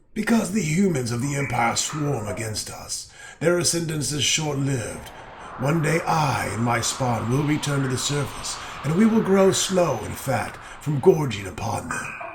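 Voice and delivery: deep, hypnotic, malicious voice. A dragon tells an adventurer why she is in the underworld, deep, hypnotic, malicious voice. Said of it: "She speaks in a deep voice, hypnotic and malicious".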